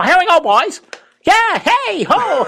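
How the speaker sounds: very high, sing-song chatter with big pitch swoops. Recalling the video of Hank Stram mic'd up at the Super Bowl: high-pitched Hank Stram impression. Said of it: "He had that high-pitched voice".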